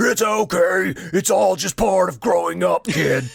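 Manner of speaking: loud, rough, slow, drawn-out rasping voice. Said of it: "Dude, that was perfect".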